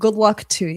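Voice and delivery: put-on Boston accent. Wishing someone good luck, trying it in a Boston accent. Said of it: "Let me say it in a Boston accent".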